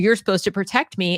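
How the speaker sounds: plain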